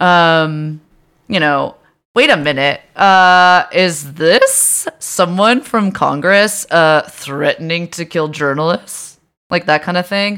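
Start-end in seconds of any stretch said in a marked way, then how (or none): 2.1-9.2 put-on snarky tone, slow. Retelling someone's tweets about a campaign ad: imitating a snarky liberal voice. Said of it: "snarky liberal voice".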